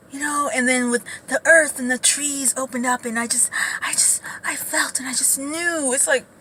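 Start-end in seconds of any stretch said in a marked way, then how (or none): 0.5-5.9 small, tiny, mouse-like voice. Mocking how cousin couples talk: high mousy voice. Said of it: "that high, like, that little, like, mousy".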